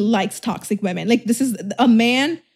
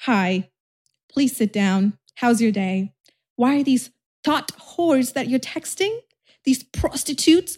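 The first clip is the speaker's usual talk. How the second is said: overly sweet, calm, gentle tone; 2 semitones higher than usual. The speaker shows how a man wants her to speak, in a mock gentle-parenting voice. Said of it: "He wants me to speak like this".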